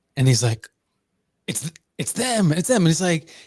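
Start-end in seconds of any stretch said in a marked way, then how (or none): 1.5-2.9 play-acted thrilled, bursting, super excited high voice. Retelling how a camper reacted to a light in the sky: imitating someone super excited. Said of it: "this dude gets, like, super excited".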